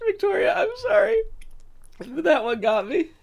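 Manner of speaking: high-pitched words breaking into laughter. Reading a viewer's message aloud on stream, laughing while talking. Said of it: "This is why I try not to laugh on stream".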